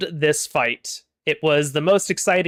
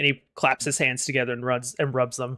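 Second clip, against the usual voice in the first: ordinary delivery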